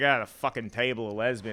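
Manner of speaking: nasty, fed-up, contemptuous tone. Showing how a restaurant order sounds in a shitty, contemptuous tone. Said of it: "if you say it with a shitty tone of voice".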